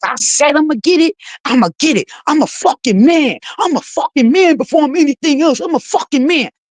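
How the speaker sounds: mock, worked-up, angry, spazzing ranting outburst. Retelling how the other person on the call reacted: imitating someone spazzing out.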